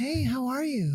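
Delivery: fake, very feminine, high put-on voice. Taking a turn at doing their best woman voice: very feminine voice. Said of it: "this is my like very feminine voice".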